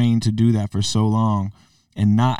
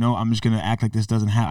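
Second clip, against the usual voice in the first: ordinary delivery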